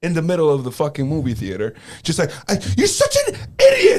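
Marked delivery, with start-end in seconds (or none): 2.5-4.0 very high, shrill, furious, angry shout. Retelling a friend's outburst in a movie theater: imitating someone yelling. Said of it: "he started yelling at me".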